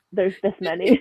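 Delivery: plain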